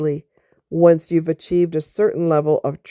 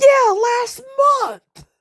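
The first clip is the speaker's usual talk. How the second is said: very high shout at top volume, full-throated. Retelling a store argument with an ex: retelling own yell at top of voice. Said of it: "I yelled at the top of my voice".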